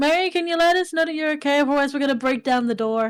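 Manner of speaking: high, loud, projected calling voice.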